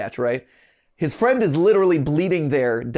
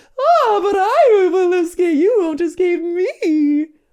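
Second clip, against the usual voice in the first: very high, loud, shrill voice, every word stretched; 13 semitones higher, 5 dB louder than usual. Acting out a crossover scene between game characters: Mommy Long Legs voice. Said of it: "That was my, uh, Mommy Longlegs impression".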